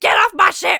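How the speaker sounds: abrupt, very loud, shrill, deranged unhinged yell. Retelling how a character suddenly snaps: imitating a suddenly deranged outburst. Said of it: "those moments of being kind of deranged".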